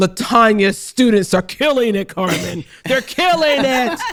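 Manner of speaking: booming, very loud voice. Recounting telling the dean about the podcast, imitating Dean Quillen's booming voice. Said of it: "in that booming voice".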